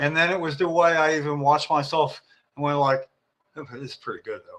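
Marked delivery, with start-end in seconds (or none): 3.6-4.6 very hushed, low, under-the-breath mutter. Retelling own words while watching oneself: imitating a mutter under breath. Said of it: "it was under my breath".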